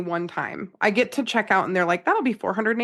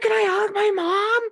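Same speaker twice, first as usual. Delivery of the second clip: very high, slow half-yell, put-on child's loud whisper; 11 semitones higher than usual. Retelling a kid asking a question at a quiet poetry reading: Mac's half-yell whisper. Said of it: "he does his Mac whisper, which is a half yell".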